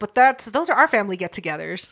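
ordinary delivery

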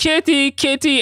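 shrill, very high screaming. Recapping a scene where Kurt searches for Kitty, acting out Kurt screaming. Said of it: "Kurt's screaming".

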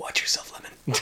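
gravelly, gruff whisper. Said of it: "You just have a rough and gruff voice".

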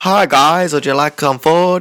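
speech like a deaf speaker. Retelling what a teacher for deaf people said to the group, imitating her speech. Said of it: "you know how deaf people talk?".

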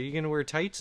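ordinary delivery

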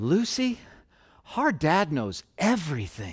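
put-on tender, trusting, sweet sing-song little-kid voice. A parent retells what Liam said to Lucy, imitating Liam's sweetest voice. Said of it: "just like the sweetest voice".

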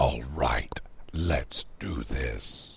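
very deep, low, quiet, gravelly character voice. In his costume, Radix gets ready to act: deeper, more gravelly voice. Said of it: "Radix said in a deeper, more gravelly voice".

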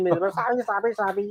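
ugly cursing an octave up, kept soft. Describing how someone curses during quarrels, imitating their cursing an octave higher. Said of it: "高八度的声音，".

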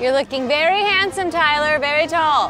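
put-on mid-Atlantic accent. Repeating a compliment to the groom tyler in a put-on mom voice. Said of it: "put on a like, mom voice".

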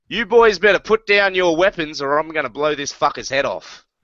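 put-on heavy, thick Australian accent throughout. A Martian Ranger holds a gun to a man's head, thick Australian accent. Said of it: "He has a thick Australian accent".

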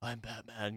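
low, hushed, very quiet and soft half-whisper. Comparing film Batman voices, imitating another: low soft half-whisper Robert Pattinson Batman voice. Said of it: "softer whisper voice".

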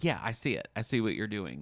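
ordinary delivery

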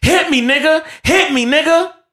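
put-on very high, shrill scream at full lungs. Retelling a face-to-face argument, acting out the woman's top-of-lungs yell. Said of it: "she just yells at the top of her lungs".

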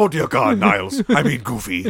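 very loud, sing-song, swinging up high. Imitating the narrator of a Christmas special: Frasier Crane impression. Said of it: "do my best Frasier Crane".

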